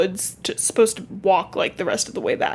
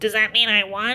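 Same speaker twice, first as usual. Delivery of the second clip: put-on nasal, pinched-nose nerd voice. Retelling what Sam said after Henri's answer: Sam in nasal nerd voice. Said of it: "why is your ner- nerd voice pinching your nose".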